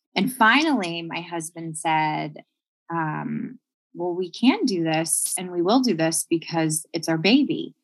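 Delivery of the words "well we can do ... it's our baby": ordinary talk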